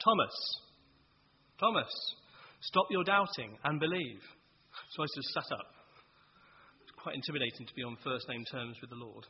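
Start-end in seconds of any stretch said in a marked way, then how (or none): 0.0-4.2 sudden, loud, dramatic preacher-style shout. Retelling a preacher calling out a message in a meeting: imitating a shout. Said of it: "he just shouted out".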